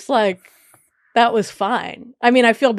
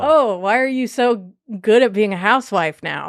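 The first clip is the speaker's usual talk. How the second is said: plain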